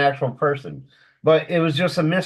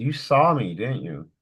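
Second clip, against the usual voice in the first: tiny, little, mouse-like voice; 4 semitones lower, 3 dB quieter than usual. Retelling a voice heard while napping on the couch, little mousy voice. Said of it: "I hear this little mousy voice".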